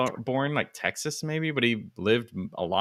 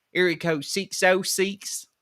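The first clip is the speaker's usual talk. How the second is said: put-on Kentucky accent, much higher; 6 semitones higher than usual. Retelling how people from Kentucky gave their phone number, in an Eastern Kentucky accent. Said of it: "I love that accent".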